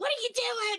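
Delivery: very high, very loud, blaring robot voice. Describing the group's loud robots, voicing Annabelle, imitating Annabelle. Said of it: "Annabelle's all".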